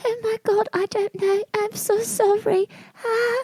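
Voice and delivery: put-on shy, timid, very high-pitched British accent. Retelling playing a really shy British character at Groundlings: shy British character voice. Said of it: "really shy British character".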